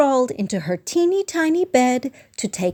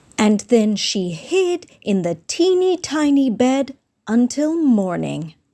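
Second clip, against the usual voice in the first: ordinary delivery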